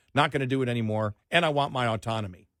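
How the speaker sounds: ordinary delivery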